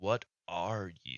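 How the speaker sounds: grinding voice like rock scraping rock. Voicing a risen skeleton king who speaks to the player: stone-on-stone grinding voice. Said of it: "stone on stone grinding".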